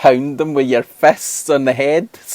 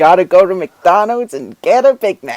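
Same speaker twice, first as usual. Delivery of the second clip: put-on American accent, pitched up; 5 semitones higher than usual. Joking with a co-host on a gaming news show, in a put-on American accent. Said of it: "Almost sound American".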